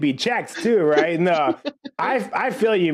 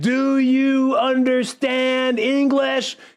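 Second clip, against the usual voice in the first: mock slow, drawn-out speech, much higher; 7 semitones higher than usual. Retelling a man at a post office talking to a worker, imitating someone talking slowly. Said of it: "he was talking to her all slow".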